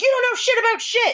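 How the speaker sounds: mock screaming. Retelling standing up and pointing at someone: retelling a scream. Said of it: "screaming and saying all this shit to him".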